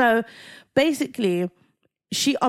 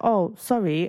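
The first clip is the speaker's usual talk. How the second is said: put-on nonchalant, offhand tone; 2 semitones lower than usual. Retelling how a guy answered a long angry message: imitating a nonchalant apology. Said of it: "it was kind of like a nonchalant".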